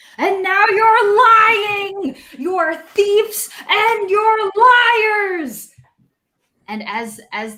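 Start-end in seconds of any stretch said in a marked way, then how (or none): 0.2-5.7 very high, shrieking, screaming goblin voice. The goblin answers the party who claim they took nothing, screaming goblin voice. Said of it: "The goblin is screaming".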